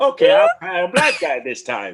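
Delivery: swooping, sing-song put-on voice, pitch up and down. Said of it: "you sound like fucking Tom Slick".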